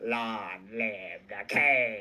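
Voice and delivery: very low, slow villain voice, king drawn out. Imagining a villain's line at the end of a movie, Skeletor voice. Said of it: "my best attempt at Skeletor's voice".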